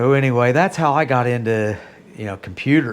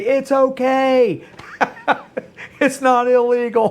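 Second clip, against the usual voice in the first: mock shouted, slow, high, drawn-out okay; 12 semitones higher than usual. Retelling the wife's answer shouted back: imitating someone yelling back. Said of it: "she yelled back to me".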